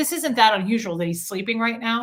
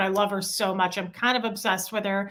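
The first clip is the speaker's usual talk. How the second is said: plain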